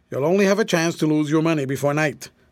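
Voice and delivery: plain reading voice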